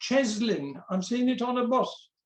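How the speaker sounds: plain reading voice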